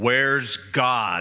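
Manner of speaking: deep-voiced preacher delivery, very low. Telling a story, voicing the preacher questioning an eight-year-old boy, deep booming voice. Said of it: "in a deep booming voice".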